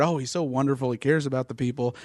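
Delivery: ordinary talk, nothing marked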